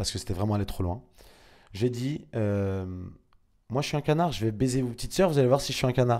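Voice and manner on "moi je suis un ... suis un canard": ordinary delivery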